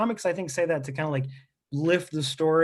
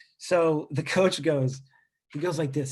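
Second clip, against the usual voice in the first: usual speaking voice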